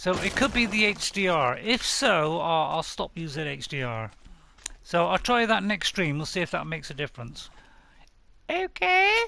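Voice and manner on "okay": sudden, much higher and louder silly voice. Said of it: "I don't know why I said it in that voice".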